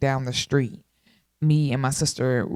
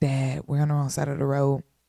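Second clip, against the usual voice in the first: put-on whisper. Retelling warning a dad while driving: imitating own whisper. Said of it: "I'm trying to whisper to him".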